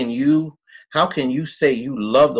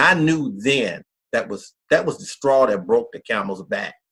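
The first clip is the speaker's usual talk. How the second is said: ordinary talk, nothing marked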